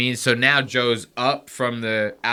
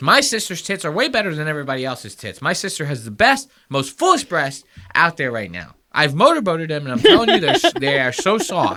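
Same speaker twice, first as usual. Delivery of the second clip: rattled off fast with pitch swinging; 5 semitones higher, 4 dB louder than usual. Showing the others how Ben Shapiro talks: fast-talking Ben Shapiro impression. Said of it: "This is Ben Shapiro".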